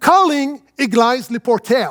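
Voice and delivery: put-on French place names pronounced with an English accent. Acting out a voice call command in the car, english accent. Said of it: "c'est quand j'ai un accent en anglais".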